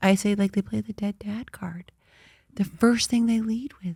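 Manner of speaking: soft, hushed, naughty-sounding whisper. Sharing an opinion the speaker feels is bad to say, whispering. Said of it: "I'm whispering because I feel like it's like a bad thing to say".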